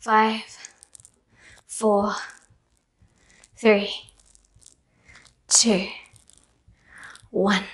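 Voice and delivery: breathing hard. Leading a workout, counting down the last seconds, breathing hard. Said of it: "I'm breathing hard".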